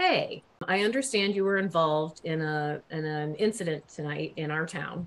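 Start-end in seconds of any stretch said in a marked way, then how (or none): none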